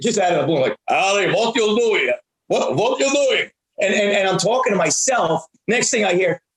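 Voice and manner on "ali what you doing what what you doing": playful, put-on Russian accent. A dad recalls talking to himself in the car's front seat; Russian accent. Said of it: "let's say I'm doing a Russian char- character".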